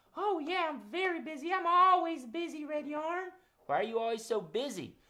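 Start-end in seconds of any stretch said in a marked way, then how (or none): 0.2-3.3 high, pitched-up mother-bird puppet voice. Voicing Mama Robin, who answers that she is busy: Mama Robin puppet voice. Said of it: "you're really busy, huh?".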